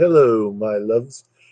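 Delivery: put-on posh, refined, cultured English accent. Telling someone how they first sounded to the speaker: cultured english accent. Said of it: "like a beautiful cultured English".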